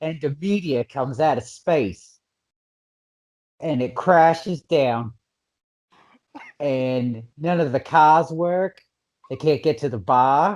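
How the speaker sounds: put-on Boston accent. Re-explaining a movie plot after being asked to: Boston accent. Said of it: "but in a Boston accent?".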